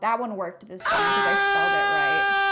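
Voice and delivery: high-pitched, loud scream.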